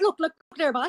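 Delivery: put-on East Coast Canadian accent. Showing a put-on accent after being teased about Canadians: East Coast Canadian accent. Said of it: "I can put on a good accent there".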